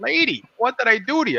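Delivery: very high, frightened, scared pleading voice. Retelling own reply to a yelling adult: imitating own scared voice. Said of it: "I'm scared to death".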